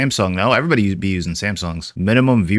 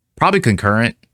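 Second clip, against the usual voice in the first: normal talking voice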